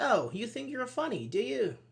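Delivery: high-pitched, mocking, ironic, sarcastic tone. Explaining sarcasm with an example about someone's joke, sarcastic. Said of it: "It's like sarcasm".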